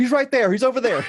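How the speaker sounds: blurted out eagerly.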